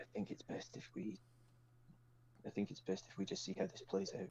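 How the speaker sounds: very soft whisper, close in, right into an ear. Player in character speaking into another character's ear, whispering. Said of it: "I whisper into Gabriella's ear".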